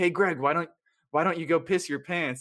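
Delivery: put-on taunting yell. Retelling a scene where he yells at Seth on the soccer field: retelling a yell. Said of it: "He's yelling at Seth for being on the soccer field".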